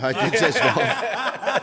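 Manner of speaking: high, slow laughing repeat.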